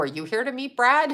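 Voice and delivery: play-acted, dry sarcastic tone. Retelling own reply to a hiker who asked about Brad: retelling own sarcastic question. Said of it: "I'm so sarcastic".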